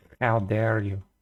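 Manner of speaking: put-on, fake Spanish accent. Answering the other speaker jokingly, in a put-on Spanish accent. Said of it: "That's my Spanish accent".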